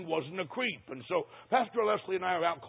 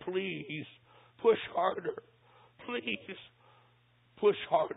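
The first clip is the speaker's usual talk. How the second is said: quiet, whispered pleading; 4 dB quieter than usual. Recounting what a frightened young man said, retelling a whispered plea. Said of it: "In just a whisper".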